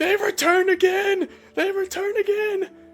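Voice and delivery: very high, panicked screaming. Narrator voices a cleric running into town, screaming in panic. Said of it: "running into town just screaming".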